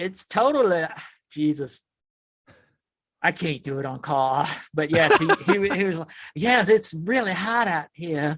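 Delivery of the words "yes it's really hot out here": put-on southern Louisiana accent, laid on. Asked to do a Zero impersonation, quoting him in Zero's Louisiana accent. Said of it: "put on the accent for us. Do do a Zero impersonation".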